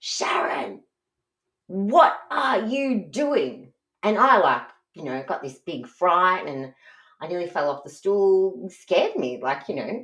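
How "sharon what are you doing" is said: very slow, stretched-out, high rising yell. Retelling how dad walked into the kitchen: imitating dad yelling. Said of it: "he yelled at me like".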